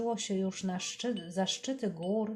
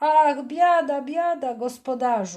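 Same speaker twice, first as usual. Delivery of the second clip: very loud, high-pitched wailing, lamenting cry; 6 semitones higher, 12 dB louder than usual. Narrator reads Janoti after the hen is lost, calling out. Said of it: "Zawołał Janoti".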